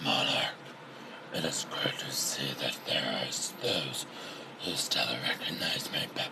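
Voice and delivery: put-on villain voice, whispered, raspy and breathy. Reading a story aloud, the narrator gives Tirach's reply in a deep raspy Tirach voice. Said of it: "trying to get a deep, raspy voice for it".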